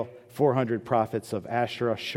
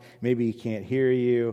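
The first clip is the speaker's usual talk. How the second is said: acted-out mocking, taunting trash-talk jab. Retelling a prophet taunting rivals whose god does not answer: imitating trash talk. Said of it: "he starts talking trash to them".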